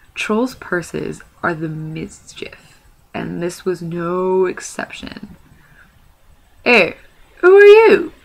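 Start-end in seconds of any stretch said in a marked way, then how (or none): 6.7-8.1 loud, very high, squeaky voice. Narrator reading a troll's purse speaking as it leaves the pocket, squeaky voice. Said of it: "it squeaked".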